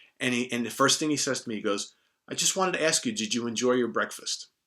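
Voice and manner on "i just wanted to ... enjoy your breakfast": put-on British accent, higher pitched. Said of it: "in his wonderful British accent".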